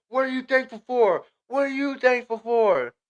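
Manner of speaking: put-on, very high, shrill, insistent, demanding shout, repeated. Retelling how a girl shouted at everyone putting up the tree: imitating someone shouting.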